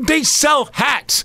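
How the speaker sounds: slow, high-pitched shout. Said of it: "I'm like".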